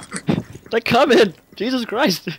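high, loud, panicked yelling.

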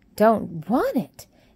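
loud, aghast, horrified exclamation. Martha reacts when Mary pushes away the cereal, exclaiming in horror. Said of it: "exclaimed Martha in horror".

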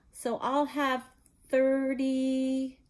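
slow, deliberate, drawn-out words, slightly high. Dudley, after thinking hard, answers Aunt Petunia about his presents; speaking slowly. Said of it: "he said slowly".

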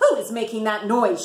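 demanding, insistent voice. Miss Merriweather strides out of her office at the lion's roar, demanding. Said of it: "she demanded".

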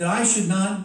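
plain reading voice

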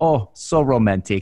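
put-on Vietnamese accent. Retelling what the man holding his phone said as he knelt, vietnamese accent. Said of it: "In his Vietnamese accent".

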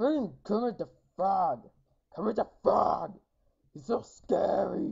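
goofy, loud, high puppet-monster voice. Gamer playing a scary game, Cookie Monster voice. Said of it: "I don't know why I'm sounding like Cookie Monster".

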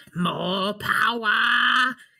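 dark overlord voice, power stretched out. Casting lightning from the fingers at skeletons: Palpatine voice. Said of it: "I was trying to do the Palpatine".

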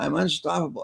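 shouting like a crowd. Retelling the whole audience's reply to the speaker: imitating an audience shouting. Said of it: "the whole audience would shout".

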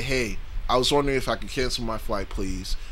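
courteous manner. Speaker shows how they would ask if they were the customer, polite. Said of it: "I would just politely say".

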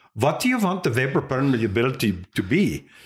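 mock Puerto Rican accent with wide pitch range.

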